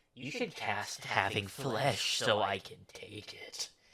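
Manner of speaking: weird, hushed demon voice, drawn out very slowly. Playing a weird demon during a game, speaking to another player: playing a weird demon. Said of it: "getting a little too into this weird demon".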